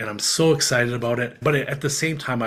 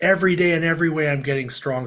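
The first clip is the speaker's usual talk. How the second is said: high, restrained little yell, mock fired-up; 5 semitones higher than usual. Retelling a phone call made from a truck: retelling a scream. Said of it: "I start screaming at my truck".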